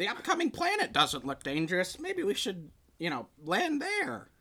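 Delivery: animated, high, swooping put-on character voice. Recounting an experience, doing the voices of characters piloting a ship, put-on ship crew voice. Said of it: "I'm going to do the voices".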